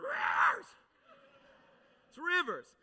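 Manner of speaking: intentionally breaking preacher voice. Showing how a Holy Ghost preacher would say the word, half-cracking the voice. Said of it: "Half cracking your voice on purpose".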